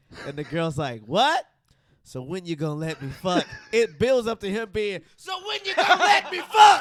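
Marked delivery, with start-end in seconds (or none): 5.2-6.9 really loud, high-pitched screaming. Retelling a guy on the phone late at night with a girl: imitating someone screaming. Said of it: "He's just screaming".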